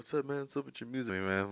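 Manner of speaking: high, teasing, mocking voice. Teasing the other speaker by imitating their interview questions: mocking imitation of the other speaker. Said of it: "every time you be like".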